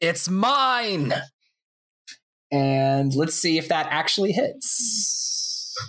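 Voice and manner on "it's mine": high battle scream with the word "mine" held long. Voicing a possessed figure slashing with a naginata: screaming in character.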